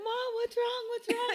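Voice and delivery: mock very high, frantic, panicked, near-tears crying. Retelling how the daughter reacted to the mother's screaming, imitating Jayla crying. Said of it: "starts crying".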